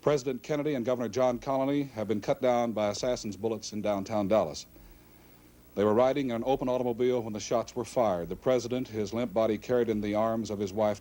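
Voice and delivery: ordinary talk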